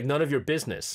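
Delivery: ordinary talk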